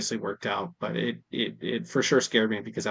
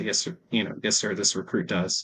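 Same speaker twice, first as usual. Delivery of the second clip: ordinary talk, nothing marked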